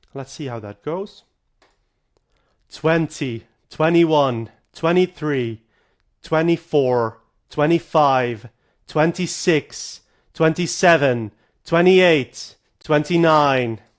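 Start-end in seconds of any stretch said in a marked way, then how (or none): 2.7-13.8 counting at very loud volume. Recording voice samples by counting aloud: loud speaking voice. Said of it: "let us record the loud speaking voice".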